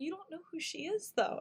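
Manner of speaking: put-on very soft, hushed voice. Retelling a TV scene, quoting a character: very soft voice as Lip. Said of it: "the softest voice".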